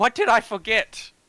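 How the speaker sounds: very loud, high, gently exasperated, kind-hearted frustration. A character almost grabs something and stops short: kind-hearted frustration. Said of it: "kind-hearted frustration".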